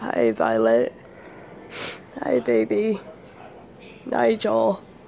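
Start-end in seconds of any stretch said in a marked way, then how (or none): 0.0-0.9 low, croaky, failing voice. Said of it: "It's getting really hard to talk".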